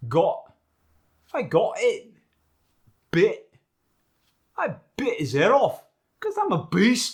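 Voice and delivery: very high, very loud, swooping Scottish accent. Teaching how the scottish dialect drops the t: scottish accent. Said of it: "the Scottish dialect".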